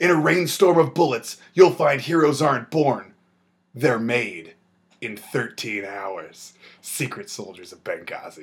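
epic, dramatic blockbuster movie trailer narration voice. Narrating a film trailer, in a movie trailer voice. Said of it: "movie trailer voices".

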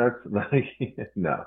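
words broken up by laughter. Answering a question about blocking recording, laughing while talking. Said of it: "Sorry for laughing".

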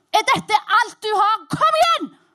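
high, loud, furious scream.

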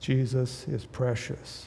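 put-on faint, very soft, aged-sounding whispered voice. Retelling John Newton preaching to a congregation in old age: very soft voice. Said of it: "Very soft voice because of his age".

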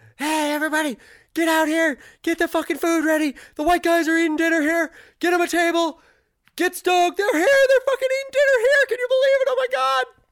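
very loud, high, shrill, wildly swooping excited screaming. Telling a story, acting out people screaming at restaurant owners: imitating people screaming. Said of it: "they basically started screaming at the owners".

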